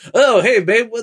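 high-pitched, wild, crazy, manic voice. Recalling an SNL sketch watched countless times, doing Steve Martin wild and crazy guy voice. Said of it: "this is like wild and crazy guy".

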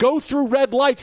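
scared, high-pitched yelling. Recalling the painful ride to the hospital, the speaker re-enacts yelling at Pam. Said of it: "And I'm yelling at Pam".

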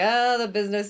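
usual speaking voice

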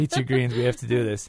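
normal talking voice

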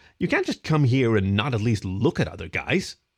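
ordinary delivery

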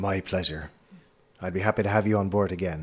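put-on accented captain voice. Voicing the ship captain answering thanks from a player: accented captain voice. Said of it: "why are you still talking like that?".

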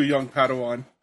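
ordinary talk

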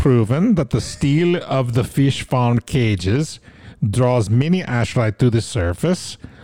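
Swedish accent, slow. Reading a text about the ashrai aloud, slipping into an accidental swedish accent. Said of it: "I just sound Swedish all of a sudden".

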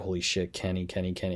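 ordinary delivery

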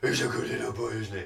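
cartoonish dog voice. Explaining how to talk to your dog, in a Scooby-Doo voice. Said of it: "in a Scooby-Doo style voice".

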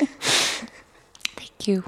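whispered, breathy, tearful murmur, crying through words. Moved to tears by an affirmation, thanking the speaker, crying while talking. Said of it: "And now I'm crying".

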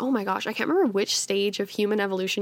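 normal talking voice

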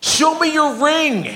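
play-acted shrill, very high, drawn-out scream. Retelling a stranger on a golf course screaming a demand: imitating someone screaming. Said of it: "this guy starts screaming at me".

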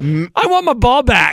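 put-on voice of a five-year-old child. Mocking how a man in the story sounded, five-year-old voice. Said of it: "He sounds like this. A 5-year-old".

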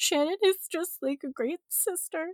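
weepy, crying voice. Retelling giving a wedding speech to a sister: imitating own crying voice. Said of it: "with, like, a crying voice".

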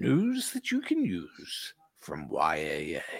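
very low, deep promo-announcer voice, phrase swung. After thanking a donor on the show, do your best Big Apple Voiceover impression. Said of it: "Let me do my best the Big Apple voiceover".

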